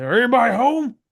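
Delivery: goofy, high voice. Speaking as Optimus, arriving with Flag in tow, in a Gomer Pyle-like voice. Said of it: "You make him sound like Gomer Pyle".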